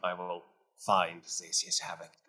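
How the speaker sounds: very quiet, low, hushed, grave, serious delivery. A player speaks as their character in a game scene, quite serious tone. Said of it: "in a quite serious tone".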